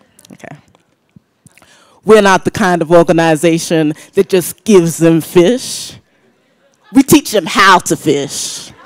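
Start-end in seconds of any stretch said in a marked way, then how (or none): 2.1-8.7 put-on American accent. Quoting development community executives in a put-on American accent. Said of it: "I'm gonna have to put on my American accent now".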